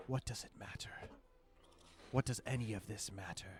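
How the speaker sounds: breathy, hushed, very rattly voice. Voicing a man in the story who turns to face you, rattly voice. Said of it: "His voice is very rattly".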